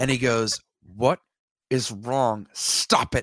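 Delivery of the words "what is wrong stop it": mock annoyed, irritated voice. Retelling what a man said when told to get the usher, mock-annoyed. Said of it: "I could tell he was annoyed".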